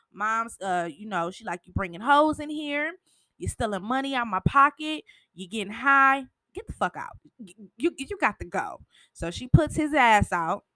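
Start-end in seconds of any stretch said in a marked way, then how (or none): 1.7-8.8 furious, angry, heated telling-off. Retelling how mom threw him out of the house, imitating her angry yelling. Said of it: "the whole time she yelling".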